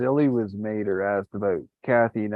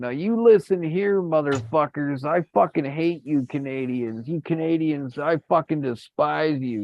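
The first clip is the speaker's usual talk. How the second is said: acted, escalating, furious angry rant, pitched up; 6 semitones higher than usual. Retelling how someone started going off at Canadians: imitating an angry rant. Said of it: "He was just going right the fuck up".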